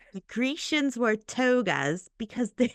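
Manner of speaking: British accent. Repeating a played sentence to copy it, slipping into an accidental British accent. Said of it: "and now I sound English, like British".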